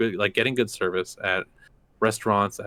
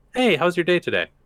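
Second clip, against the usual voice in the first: friendly, warm tone, slightly raised; 9 semitones higher, 4 dB louder than usual. Explaining what you need to know to be good at customer service, using a friendly tone. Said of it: "a friendly tone".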